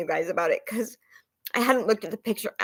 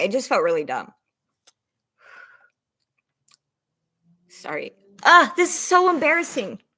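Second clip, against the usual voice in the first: fighting back tears, voice swooping in pitch; 3 semitones higher, 3 dB louder than usual. Speaker apologizes to the audience while starting a story, holding back tears. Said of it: "I'm not going to cry".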